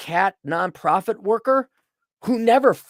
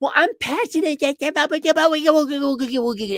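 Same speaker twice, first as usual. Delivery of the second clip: mock baby talk, higher pitch; 7 semitones higher than usual. Imitating women who say they follow their passion: mocking baby talk. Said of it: "literally baby talk googie googie".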